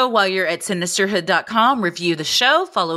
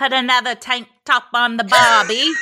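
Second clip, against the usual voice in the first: awful, bad, put-on Australian accent; 4 semitones higher than usual. Joking about tank tops for australian listeners: bad put-on australian accent. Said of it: "This is awful".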